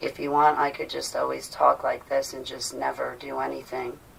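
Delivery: very quiet, low, level monotone drone. Speaking to listeners, showing the way of talking that puts them to sleep: monotone. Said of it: "I could put you to sleep if I talk very monotone".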